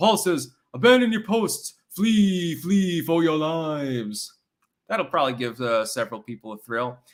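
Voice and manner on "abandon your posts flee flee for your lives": slow, drawn-out, "lives" stretched and stressed. Asked for the voice, saying a line in character: Bernie Sanders voice. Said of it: "I'm going to say this in the Bernie Sanders voice".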